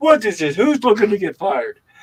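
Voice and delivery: thick put-on Italian accent, loud and swooping. Retelling a man finding patties in the kitchen trash, in a heavy Italian accent. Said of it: "In this heavy Italian accent".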